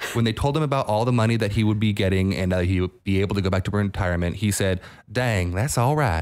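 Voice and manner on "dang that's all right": put-on accent of an older man from Texas. Retelling an older Texas man's reaction on hearing about his money, older Texas man accent. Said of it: "I'll say this in the accent because he is an older man from Texas".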